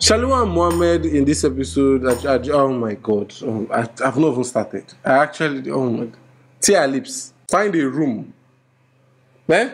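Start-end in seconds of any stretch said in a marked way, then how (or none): none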